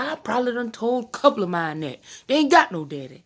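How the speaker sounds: put-on high granny voice. Retelling what her granny said today: imitating her granny's voice. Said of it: "my best reenactment of her voice".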